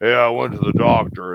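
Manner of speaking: put-on gruff voice. Retelling what a man with weird stories would say, imitating a gruff voice. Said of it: "real gruff".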